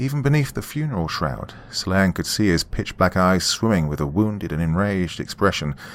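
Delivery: ordinary delivery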